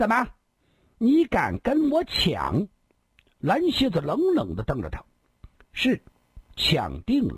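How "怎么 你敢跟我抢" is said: sharp, severe, harsh, fierce, pitched-up voice. Zhizunbao challenges Blue Scorpion, who wants the same man: harsh, fierce voice. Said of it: "厉声说道".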